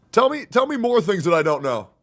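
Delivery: sarcastic, high and loud. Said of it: "So that sounds sarcastic to me".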